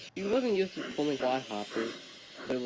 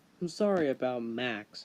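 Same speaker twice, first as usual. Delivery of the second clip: ordinary delivery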